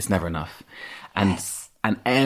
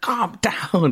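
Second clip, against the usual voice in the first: shrill, high, sharp-edged shout; 12 semitones higher than usual. Retelling how grandpa told off a screaming child: imitating grandpa shouting. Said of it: "he shouted at me, like".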